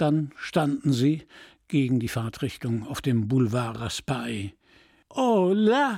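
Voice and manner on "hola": gleeful whooping cheer, high, "hola" stretched long. Narrator reading the driver as he races around the statue, cheering. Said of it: "jubelte der Fahrer".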